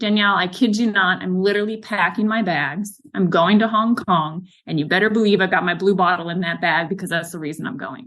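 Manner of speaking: ordinary talk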